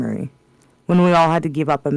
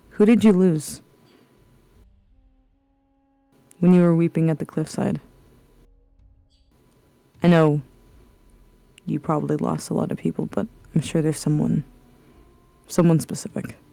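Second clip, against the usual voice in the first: personal, one-to-one, confiding, close-in delivery. A player character steps closer to the table to question her, lowered voice. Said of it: "I'm going to lower my voice".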